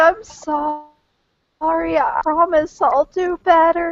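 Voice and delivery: put-on tearless sobbing, very high pitched. Acting out what they'd do when handed over to a guard: fake crying. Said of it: "fake ball scaring, not not on tears yet".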